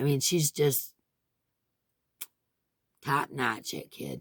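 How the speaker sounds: teary, emotional voice welling up with tears. Talking about the hospice nurse, tearing up. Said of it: "I'm tearing up".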